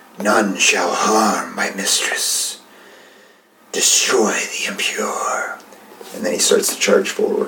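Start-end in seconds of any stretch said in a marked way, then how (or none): 0.2-5.6 venomous, menacing hissed voice. A game master voices a ghostly swordsman drawing his blade: hissing. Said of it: "he hisses out".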